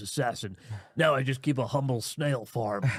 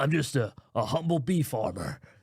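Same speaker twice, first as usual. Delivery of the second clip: put-on slow speech mixing American and British accents. Retelling a movie trailer line in a weird American British accent. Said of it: "in a sort of weird American British accent".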